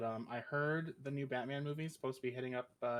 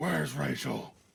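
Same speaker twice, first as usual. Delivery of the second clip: very loud caped vigilante voice at full volume; 9 dB louder than usual. Asked for a little snippet of Batman, the speaker performs it; Batman voice. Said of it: "Let's hear a little snippet of Batman".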